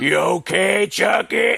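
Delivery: gruff grown man voice. Retelling a favorite movie moment: imitating Andy shouting like a thirty-year-old man. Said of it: "all of a sudden, he's like a thirty-year-old man".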